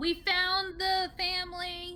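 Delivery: high shouted call. Speaking in character, calling out to the captives held in the cells, yelling. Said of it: "I yell".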